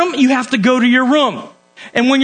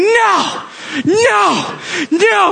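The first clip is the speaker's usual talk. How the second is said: mock pitched-up yelling, repeated; 8 semitones higher than usual. The speaker acts out him yelling after being told to stay until quiet; imitating him yelling. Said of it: "he starts yelling".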